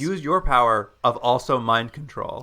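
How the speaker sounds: plain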